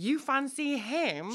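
shrill, very high, loud yell. A girl calls out to the narrator in front of a boy; shouting. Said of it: "Then Gemma shouts".

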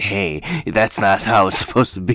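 objecting tone, spoken right on the mic. Picturing the other speaker leaning into the mic, imitating the other speaker into the mic. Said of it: "I just hear you just going like this".

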